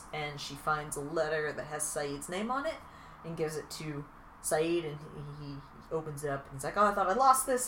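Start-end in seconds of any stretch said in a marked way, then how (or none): 6.8-7.7 acted glad, delighted, pleased tone. Retelling how he opens a found letter, acting out a happy tone. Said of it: "Why did you say it in that tone of voice?".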